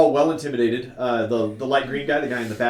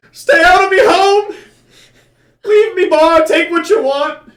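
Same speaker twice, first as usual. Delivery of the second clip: shrill, very high shrieking scream at top volume; 9 dB louder than usual. Voicing the bartender down there as he screams at them, screaming. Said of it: "and he just screams".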